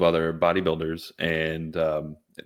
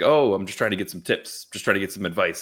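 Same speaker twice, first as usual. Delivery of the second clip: put-on very nonchalant, casual, offhand, unbothered tone; 2 semitones higher than usual. Retelling what a guy said when he came over: imitating a nonchalant guy. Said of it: "very nonchalantly".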